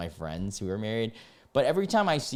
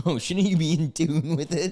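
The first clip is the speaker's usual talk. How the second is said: high, mocking singsong voice. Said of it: "they're like".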